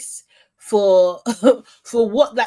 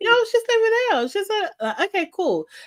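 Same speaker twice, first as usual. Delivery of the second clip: alternate put-on voice, high and quick; 11 semitones higher than usual. Speaker quotes a man who has two vocal tones, imitating his higher voice. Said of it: "He's doing it in his higher voice".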